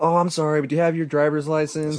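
put-on giggly flirtatious voice. Retelling how a police officer who pulled them over spoke: imitating a giggly voice. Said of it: "she started getting all giggly".

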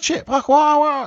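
put-on frantic tone. Acting out how people in the film should react: imitating someone frantic. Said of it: "this would be frantic".

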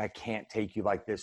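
mock tearful crying voice. Retelling what the mother said while crying: imitating mother crying. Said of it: "And she's crying".

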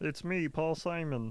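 slow frog-puppet voice. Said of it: "He sounds like Kermit the Frog".

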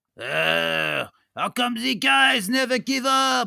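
loud, drawn-out fake Belgian accent, long drawn "uh". Voicing a villain fleeing the heroes: put-on Belgian accent. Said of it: "Is that the voice you're going with?".

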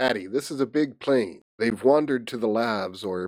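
usual speaking voice

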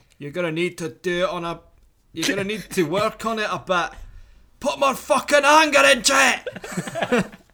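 put-on high-pitched Scottish accent. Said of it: "you'll have to read this out in a Scottish accent".

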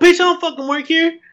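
put-on, high, angry outburst. Retelling being mistaken for staff by a lady: retelling own angry retort. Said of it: "I got so mad".

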